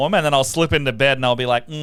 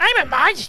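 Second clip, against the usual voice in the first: teasing, mocking tone at a very high pitch. Repeating the other speaker's words back: mocking imitation. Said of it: "but I'll stick to it".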